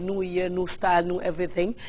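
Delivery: ordinary delivery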